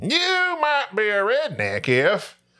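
high, slow, stretched-out voice with swooping pitch. Asked by another speaker to hear the impersonation: Jeff Foxworthy impersonation. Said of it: "Let me hear the impersonation".

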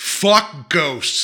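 put-on mild yell. Retelling what they yelled from a car window at a ghost tour car, retelling a loud yell. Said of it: "is what I yelled out real loud".

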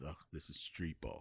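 muttered under the breath. Retelling a player's reaction in a film room: imitating someone muttering under his breath. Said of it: "says under his breath".

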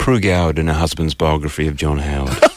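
mock deadpan delivery. Retelling his all-serious deadpan answer to the speaker's trouble sleeping. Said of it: "in all serious, deadpan".

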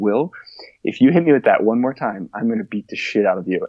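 put-on super calm tone. Retelling what a drunk driver said to the speaker, imitating someone very calm. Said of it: "He very calmly looked at me and was like".

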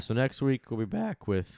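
breaking, cracked voice, cracking mid-phrase. Host wrapping up, announcing what comes next week, voice cracking. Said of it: "my voice cracked".

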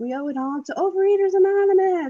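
very high, joyous, proud gushing, rising. A mother retells her 13-year-old son's words, imitating his joyous pride. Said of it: "proud and like joyously saying the words".

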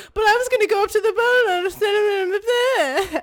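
high, whiny crying, "send" stretched out. Retelling a film scene, quoting Luke's complaint to his uncle: whiny Luke voice. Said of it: "is so whiny".

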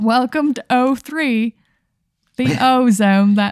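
put-on British accent. Voicing a greeter who welcomes the player: crisp british accent. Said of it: "he has a British accent".

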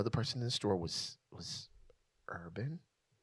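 urban dropped to a hushed whisper. Redoing the bit when asked, with urban instead: mock whisper on "urban". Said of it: "do the same whisper, but use the word urban".

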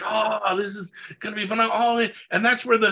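acted-out, ecstatic, can't-contain-it glee. Retelling how a collaborator reacted to the ending: imitating ecstatic Mike. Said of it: "he was all ecstatic".

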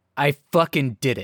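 normal talking voice

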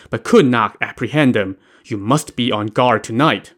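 plain

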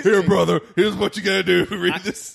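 rough, raspy macho man voice. Imitating an actor's line from the movie: Corey Feldman macho man voice. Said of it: "macho man voice".

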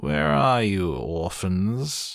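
scratchy, raspy, called out. Count Olaf calls out for the orphans on coming home, in his scratchy voice. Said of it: "Count Olaf called out in his scratchy voice".

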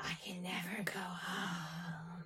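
very slow, eerie, lamenting female ghost voice. Retelling a crackly voicemail on a tape recorder: imitating a lady ghost voice. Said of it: "the lady voice saying".

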